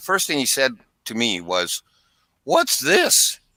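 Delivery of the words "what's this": very high, squeaky, strained voice. Imitating the first thing a man said to the speaker, in a strained voice. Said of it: "I'll imitate him. ... kind of a high, squeaky voice ... Like kind of a strained, strained voice".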